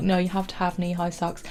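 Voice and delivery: ordinary talk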